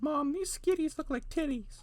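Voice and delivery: put-on high-pitched child voice.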